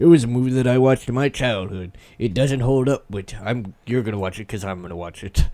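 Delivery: put-on pirate accent.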